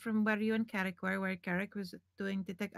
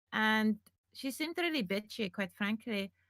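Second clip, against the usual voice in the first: plain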